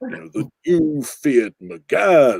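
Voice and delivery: rich, deep put-on impression voice. Showing how an impression starts low and rises: Jeremy Clarkson impression. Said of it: "with Jeremy, you have to start low".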